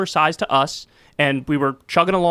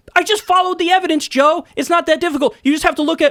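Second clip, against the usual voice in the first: getting mad, heated, voice shooting very high; 12 semitones higher, 4 dB louder than usual. Talking to Joe about Russiagate and the evidence, getting mad. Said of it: "I'm sorry, I'm getting mad".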